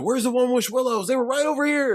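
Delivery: acted-out high, frantic freak-out. Retelling a movie character confronting a store worker: imitating someone freaking out. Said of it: "He's freaking out at the dude".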